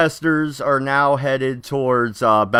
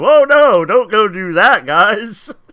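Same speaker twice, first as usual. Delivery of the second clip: mocking, high, loud, drawn-out sarcastic tone; 7 semitones higher, 6 dB louder than usual. Imagining Beverly Hills people reacting to riots coming closer: imitating a sarcastic reaction. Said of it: "I can just imagine it being that sarcastic too".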